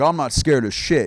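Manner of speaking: macho, cocky, too-cool tough-guy swagger. Mocking guys who want to look cool: imitating a tough guy acting cool. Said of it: "guys who just, like, wanna look cool and they're like".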